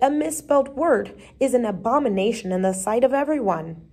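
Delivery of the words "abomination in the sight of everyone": ordinary delivery, nothing marked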